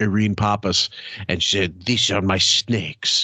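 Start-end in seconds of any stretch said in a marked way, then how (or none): 1.8-3.3 put-on shoddy, vaguely Russian accent. Retelling a film line: imitating Angelina Jolie's Russian-sounding accent. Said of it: "she sounded like some Russian prosy".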